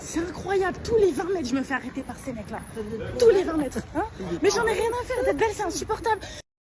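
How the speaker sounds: loud, high, furious yelling.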